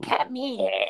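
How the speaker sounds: tiny, very high, weird little demon voice. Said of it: "weird little voice".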